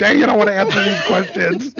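high-pitched loud yelling. Retelling listening to a podcast at work: imitating own yelling. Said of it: "I'm just at work yelling at my things".

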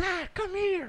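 shrill, very high-pitched screaming. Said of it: "Cardi B screaming like".

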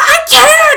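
shrill, very loud sobbing freak-out, very high and panicked. Retelling own reply while in pain and hyperventilating: retelling own panicked outburst. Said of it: "flipped my lid".

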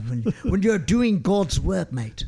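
put-on English accent. Chatting with Frankie about Kim Davis, in a put-on English accent. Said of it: "Do you really think that God is going to have an accent like that?".

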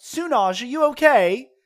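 very loud, very high-pitched call-out. Yelling to a fallen companion in the game: yelling out in character. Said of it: "I yell out".

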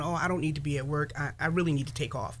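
acted tearful voice. Retelling feeling really bad at the cardiologist, imitating own past crying.

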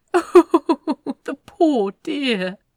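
very slow, high, tittering, giggly exclamation. A man waves his wine glass toward the screen; giggling. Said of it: "Aziraphel giggled".

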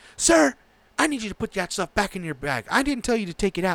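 high, angry, pissed-off scolding yell. Retelling an airport security lady scolding him, retelling her yelling. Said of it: "She was like yelling at me".

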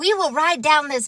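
plain reading voice

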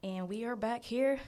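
plain

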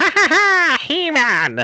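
cackling villain voice, high. Podcast co-host, asked to show his version, performs it: Skeletor cackle. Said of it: "Let me hear your Skeletor".

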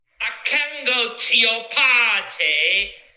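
put-on British accent. Sharing a voice note sent earlier that day, in a put-on British accent. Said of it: "un voice note que mandé hoy en acento británico".

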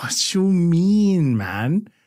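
put-on Toronto slang accent with mean drawn out. Playing Clarence, the host answers the other host in Clarence's Toronto accent. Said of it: "why don't you talk like this usually".

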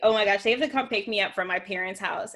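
ordinary delivery

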